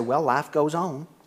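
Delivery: Texan way of talking. Quoting what a mother always used to say: imitating mom's texas accent. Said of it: "with her Texas accent".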